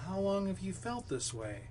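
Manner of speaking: curious, probing doctor voice. Example of sounding like a doctor asking a question: inquisitive tone. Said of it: "got this inquisitive sound in your voice".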